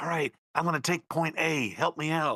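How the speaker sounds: put-on whisper. Quoting a neighbor who plays on Discord late: imitating someone whispering. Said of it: "he has to whisper".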